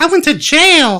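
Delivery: squeaky, very high-pitched put-on voice. Imitating a man who got arrested, in a high-pitched voice. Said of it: "and high voice".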